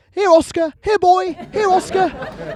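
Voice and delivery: very high-pitched voice calling a dog. Imitating people in parks calling a dog: calling a dog in the park. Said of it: "You hear that in parks".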